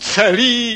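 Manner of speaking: high, indignant, scandalized yelp.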